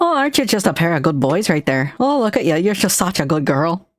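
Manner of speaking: Minnesotan way of talking. Speaker imagines talking to their chat, in a minnesota accent. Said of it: "I fucking love the Minnesota accent".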